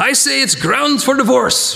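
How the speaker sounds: high, unconvincing, put-on Yiddish-inflected accent.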